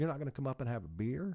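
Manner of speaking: put-on thick, strong Southern country accent. Retelling what a woman said to her while working security, strong southern accent. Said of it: "real strong Southern accent".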